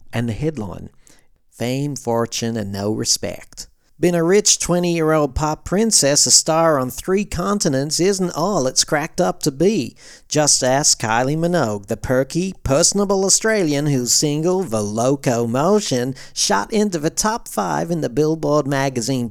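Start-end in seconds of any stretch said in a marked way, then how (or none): 1.5-19.3 clumsy, very bad put-on American accent. Reading aloud a 1988 la times article, in a very bad american accent. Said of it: "I have no choice but to read this in a very bad American accent".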